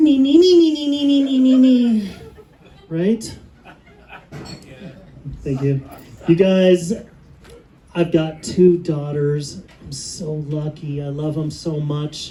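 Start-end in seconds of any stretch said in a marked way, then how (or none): 0.0-2.1 high, loud mocking nee-nee nonsense voice. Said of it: "she goes".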